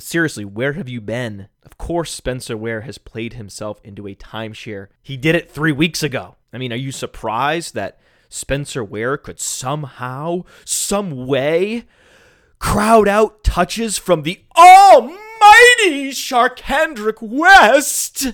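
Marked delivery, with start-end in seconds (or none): 10.6-18.3 animated, swooping, raised voice climbing higher. Speaking to a co-host in front of an audience, with a raised voice. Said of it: "Just raised my voice again".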